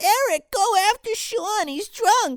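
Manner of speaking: very high-pitched, mocking put-on voice. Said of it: "his girlfriend's like".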